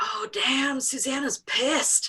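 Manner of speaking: stage whisper. Retelling guys in the front row half-whispering to each other: retelling a half-whisper. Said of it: "whisper to each other".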